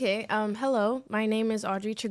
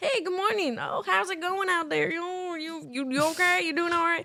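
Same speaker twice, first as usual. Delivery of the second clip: put-on Indiana accent, pitched way up; 10 semitones higher than usual. Imitating how everybody in Indiana greets people: Indiana accent. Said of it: "they got, like, accents and stuff".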